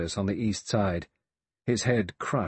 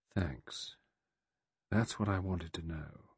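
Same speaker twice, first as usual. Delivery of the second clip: soft, much quieter and lower; 3 semitones lower, 9 dB quieter than usual. Lombard replies to Vera, softly. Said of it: "Lombard said softly".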